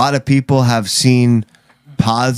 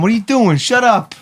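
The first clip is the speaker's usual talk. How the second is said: put-on Puerto Rican accent, pitched high; 12 semitones higher than usual. Defending a bop on the head, imitating a Puerto Rican mom. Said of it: "It's like a Puerto Rican mom".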